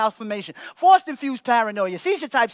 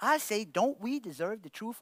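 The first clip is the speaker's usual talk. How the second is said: plain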